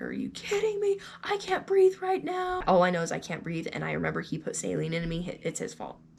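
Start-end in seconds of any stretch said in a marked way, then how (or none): 0.0-2.6 acted, furious, very high-pitched, angry yelling. Patient retells turning on the doctor who said nothing was wrong, retelling angry yelling at doctor. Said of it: "I just start yelling".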